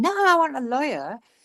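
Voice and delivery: loud, high-pitched screaming. Retelling a man's reply to a minister's offer, imitating someone screaming. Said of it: "and he's screaming".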